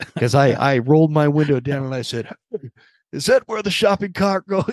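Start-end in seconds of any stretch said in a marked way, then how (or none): 3.1-4.7 mock yelling, high-pitched scolding scream. Retelling yelling from a car window at a parking-lot stranger: retelling a scream. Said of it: "I'm just screaming".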